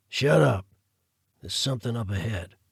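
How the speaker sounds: dropped, low-voiced delivery. Moving through the trees, Jackson cuts Carruth off: low voice. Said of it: "Lieutenant," / said [name] in a low voice. / Lieutenant,"".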